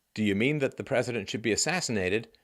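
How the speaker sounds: ordinary delivery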